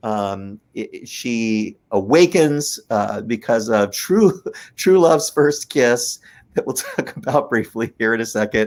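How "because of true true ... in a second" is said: talking while laughing, can't stop laughing. Describing a ride's true love's kiss scene: laughing while talking. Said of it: "I can't stop laughing".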